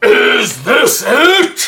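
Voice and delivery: big, loud booming voice. Voicing an unseen figure heard in the dark: big booming voice. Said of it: "a big booming voice that says".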